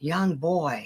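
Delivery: soft, half-whispered delivery. Speaker recounts what they said while watching a show, retelling kinda whispering. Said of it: "I'm kinda whispering".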